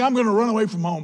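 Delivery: imitated voice of a mad, angry little kid. Telling a parenting story about a child running away: imitating a mad little kid. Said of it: "Junior gets all mad".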